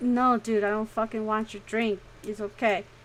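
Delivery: ordinary delivery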